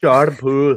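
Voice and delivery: put-on Irish accent. A bettor picking a player says the player's name in an Irish accent. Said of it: "how do you say this guy's name in an uh, Irish accent".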